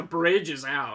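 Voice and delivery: normal talking voice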